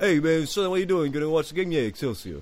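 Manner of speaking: sketchy, loose, vague New York accent. Riffing on the word excelsior with the other speaker, vague New York accent. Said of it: "vague new york accent".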